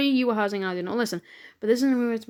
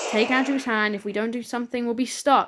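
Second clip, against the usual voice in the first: ordinary talk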